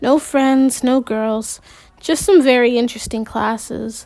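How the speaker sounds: plain reading voice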